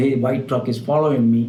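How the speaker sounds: ordinary talk, nothing marked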